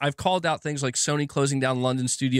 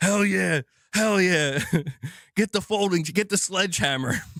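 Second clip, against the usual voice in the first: high, eager, hyped put-on voice. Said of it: "Gaming Survivor's like".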